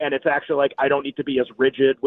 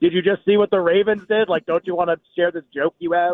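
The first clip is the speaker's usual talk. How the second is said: unhinged, maniacal put-on voice; 3 semitones higher than usual. Imagining his phone tempting him to tweet on NFL Sunday, mock maniacal voice. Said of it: "with like a maniacal voice".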